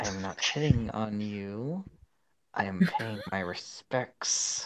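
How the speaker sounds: spoken through gritted, clenched teeth. Voicing a character denying that he is hitting on her: speaking through gritted teeth. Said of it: "he says between his teeth".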